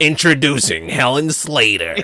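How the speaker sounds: slimy, seedy movie-trailer announcer voice. Contrasting with good trailers, imitating a bad trailer's announcer: sleazy announcer. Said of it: "And then this is".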